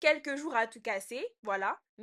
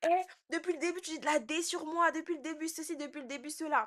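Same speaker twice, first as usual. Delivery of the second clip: acted, irritated, angry outburst; 4 semitones higher than usual. Retelling what she snapped at someone who badmouthed her, retelling an angry outburst in slang. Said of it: "comme je suis énervée, je commence à, à activer l'argot".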